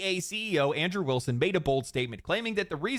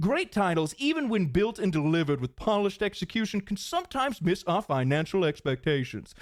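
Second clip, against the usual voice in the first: refined English corporate-spokesman tone. Acting out a company CEO's statement, in your best CEO voice. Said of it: "in my best C E O voice".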